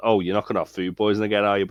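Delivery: dismissive, brushing-off, offhand throwaway tone. Quoting a character's dismissive line while discussing a scene: imitating Nate sounding dismissive. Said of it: "a bit dismissive about it".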